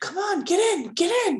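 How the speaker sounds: tiny, very high little voice. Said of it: "you hear a small voice".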